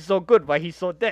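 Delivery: ordinary delivery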